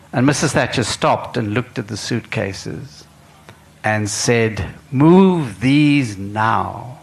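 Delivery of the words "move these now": very loud, barked delivery, drawn out. Retelling Mrs. Thatcher seeing suitcases at the Mount Nelson entrance, Mrs. Thatcher's very loud command. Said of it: "in a very loud voice".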